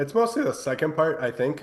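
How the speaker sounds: voice breaking mid-line. Answering a question about the Lakers, voice cracking. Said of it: "as my voice cracks for some reason".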